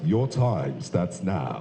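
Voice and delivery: very deep, low, slow, drawn-out voice. Introducing his mentor and former boss, the speaker says the opening line imitating the mentor's voice. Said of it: "Let me say it in his voice".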